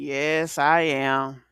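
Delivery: voice sinking down low. Retelling how a young lady answered, imitating her voice dropping low. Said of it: "whole voice kind of went down like".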